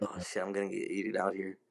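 mock scared, fearful voice. Retelling being lost in dark woods at night: imitating own scared past self. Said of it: "I'm getting scared".

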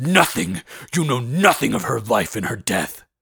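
harsh tone. Brom answers someone who asked about his Luce, harshly. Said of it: "Brom replied harshly".

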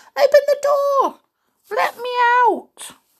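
tiny voice shouting, very high. Narrator reading a voice calling from inside the oven, in a small shouting voice. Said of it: "A little voice began to shout".

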